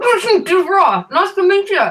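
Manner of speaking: talking with mouth full. A player's character introduces himself to another, talking through a mouthful of bagel. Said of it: "says through a mouthful of bagel".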